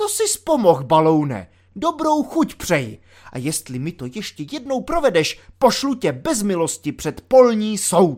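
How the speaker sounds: loud, triumphant, victorious exclamation. The lieutenant stops a frightened soldier in the doorway; triumphant exclamation. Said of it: "zvolal vítězoslavně".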